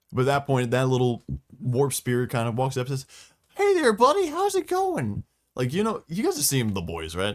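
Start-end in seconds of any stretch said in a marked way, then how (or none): 3.6-5.3 very high, loud, squeaky cartoon chipmunk voice. Voicing a little warp spirit walking up to someone, in an animated chipmunk voice. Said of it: "the fucking like animated chipmunk".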